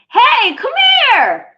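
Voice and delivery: piercing, very high, very loud shriek. Explaining that some lines need a scream, the speaker demonstrates: screaming. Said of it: "some parts you're gonna have to scream".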